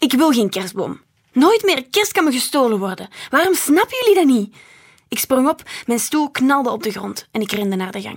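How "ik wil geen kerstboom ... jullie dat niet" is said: curt, loud, high-pitched snapping outburst. The narrator speaks to mama and the others at home; snapping. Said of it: "snauwde ik".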